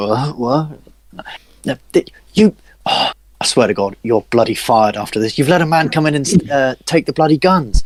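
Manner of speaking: heated, angry scolding, tripping over words. Voicing a guard scolding a guard who slept on watch: scolding guard. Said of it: "And he's like".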